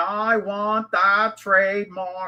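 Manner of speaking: slow, drawn-out put-on Boston accent. Mocking how someone demands a trademark at the U.S. Patent Office, in a put-on Boston accent. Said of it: "you have your best Bostonian accent".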